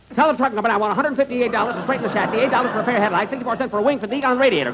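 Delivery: fast, high, rattled-off listing delivery.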